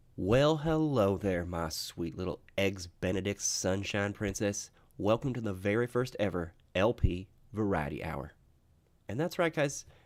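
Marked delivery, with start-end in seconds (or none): 0.2-8.4 drawling Southern-style accent. Greeting listeners at the start of the show: southern accent. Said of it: "I can go from Southern style".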